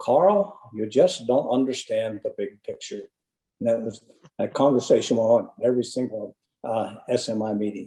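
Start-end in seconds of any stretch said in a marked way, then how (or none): 0.0-3.0 put-on speaking with New England accent and vowels. Recalling the end of debates with Tom, imitating Tom's New England accent. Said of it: "in his best New England accent".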